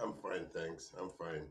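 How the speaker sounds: very quiet, low and downbeat. Guest answering the host's welcome, sounding really low. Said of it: "You sound really low".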